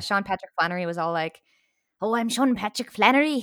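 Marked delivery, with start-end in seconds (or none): 2.0-3.4 clumsy, overdone, badly put-on Irish accent. Imitating an actor introducing himself in a film scene: Sean Patrick Flanery's Irish accent. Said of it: "Irish accent when you talk about Sean Patrick Flannery".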